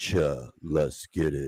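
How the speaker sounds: smoldering sultry baritone, very deep, very low, very drawn out. Retelling what someone said, imitating a sultry baritone voice. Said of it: "Sultry, uh, t-, uh, baritone voice".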